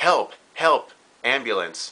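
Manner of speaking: fake, staged screaming cries. Showing the right response to a guest's cardiac arrest: mock screaming for help. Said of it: "this is done so by screaming".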